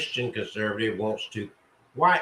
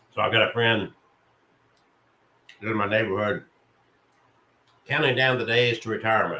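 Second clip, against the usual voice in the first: faster speech while eating, between bites. Talking to listeners while eating your breakfast: talking while eating breakfast. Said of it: "I'm eating my breakfast as I talk here".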